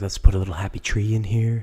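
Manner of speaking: gentle whispered voice. Imitating the painter who whispers: whispering Bob Ross impression. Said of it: "he's the guy that whispers".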